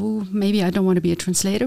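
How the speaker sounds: ordinary delivery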